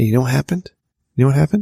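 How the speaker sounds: whispered speech. Speaker telling a listener about working overtime, whispering with a sore throat. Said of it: "I'm sorry I'm whispering".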